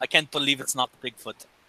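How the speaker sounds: soft, romantic, leading-man style voice. Do the voice for the guys while it's in your head, trying not to crack up: Fabio voice. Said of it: "You know the Fabio voice".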